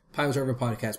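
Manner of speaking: rapid-fire, very fast delivery. Asked to say the podcast name really fast, said really fast. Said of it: "Say that really fast".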